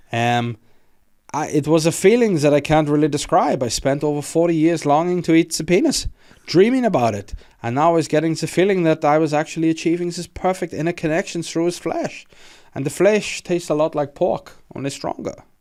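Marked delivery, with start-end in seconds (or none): 1.5-15.3 German accent, put-on. Quoting what Armin Meiwes said, as asked: German voice as Armin Meiwes. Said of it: "do you want me to do it in German voice".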